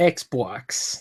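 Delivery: said with American accent. Showing how Americans say the word: American accent on Xbox. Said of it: "That's how Americans say Xbox".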